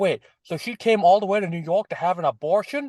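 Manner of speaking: put-on thick, over-the-top New York accent. Imitating a TV character's speech: over-the-top New York accent. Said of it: "the most over-the-top New York accent".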